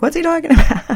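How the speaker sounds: high-pitched, laughing, puzzled mock confusion.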